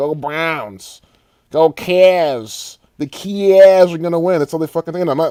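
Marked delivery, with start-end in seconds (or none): 0.0-4.4 put-on Cleveland accent. Imitating how Cleveland locals talk, Cleveland accent with wide A's. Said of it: "The fucking Cleveland accent, you know, their A's are so fucking wide".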